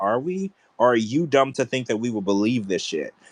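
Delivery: plain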